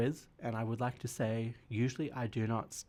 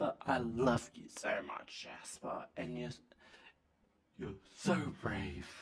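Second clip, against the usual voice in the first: put-on drunk voice; 3 dB quieter than usual. Acting out what a drunk person says to Jasper, imitating a drunk person. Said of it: "my impression of a drunk person".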